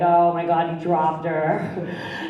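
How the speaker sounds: slow, sorrowful, pitying dismay, acted out. Imitating the audience looking sad at her story: imitating the audience acting sad. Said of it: "looking at me all sad".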